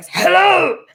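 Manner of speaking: very high-pitched voice. Trying out a Helen voice for the other speaker: Helen voice. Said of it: "how's my Helen voice?".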